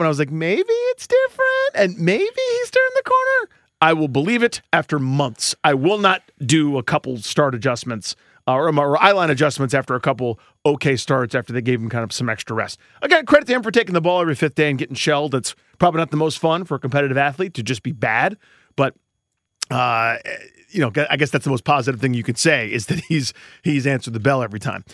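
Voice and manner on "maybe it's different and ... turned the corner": very high, slow, raised voice. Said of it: "I did a thing where my voice went up".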